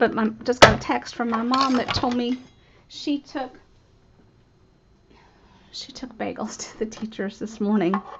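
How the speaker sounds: teary, choking up, fighting back crying. Speaking to the audience while trying not to cry, choking up. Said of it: "I'm not gonna cry".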